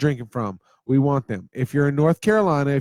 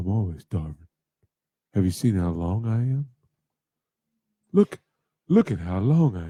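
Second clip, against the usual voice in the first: very deep, low talking-dog voice; 7 semitones lower than usual. Answering as the dog after asking it how it felt: voicing the dog. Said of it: "tell 'em how you felt".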